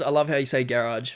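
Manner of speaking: plain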